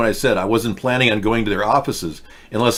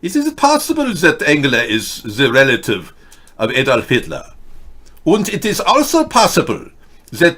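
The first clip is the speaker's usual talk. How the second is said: German-sounding accent, higher pitch; 4 semitones higher, 3 dB louder than usual. Musing aloud, then catching the slip: talking like a German. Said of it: "why am I talking like a German?".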